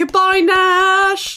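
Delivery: high, full-throated yell with a name drawn out. Playing a character setting off a bomb in a role-play, yelling. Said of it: "I'm yelling".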